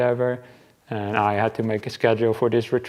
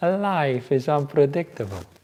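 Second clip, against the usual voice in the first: put-on Italian accent; 3 semitones higher than usual. Quoting a fellow monk's catchphrase: imitating an Italian accent. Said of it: "said it with his Italian accent".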